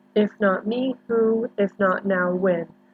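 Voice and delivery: ordinary talk, nothing marked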